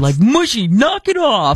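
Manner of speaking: high, slow, drawn-out, stern mock scolding voice.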